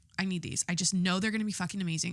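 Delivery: ordinary talk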